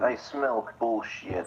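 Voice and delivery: put-on, fake Russian accent. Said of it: "Nicholas talking in a Russian accent".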